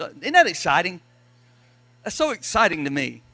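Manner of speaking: loud, dry, swooping sarcasm with fake excitement. Recounting three adults guessing how the tent poles fit, sarcastic. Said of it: "Y'all can tell I'm being sarcastic".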